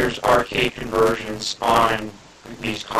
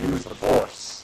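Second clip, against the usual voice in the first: put-on harsh, crunchy old-console video game voice; 3 semitones higher than usual. Speaker recalling the game part where a guy comes up: horrible NES voice. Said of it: "in that horrible NES voice".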